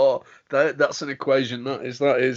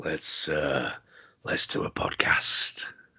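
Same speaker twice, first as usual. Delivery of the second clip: put-on seductive voice, much lower, quieter; 11 semitones lower, 11 dB quieter than usual. Asked to do the podcast line, the speaker says it in a sexy voice. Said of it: "That's just my sexy voice".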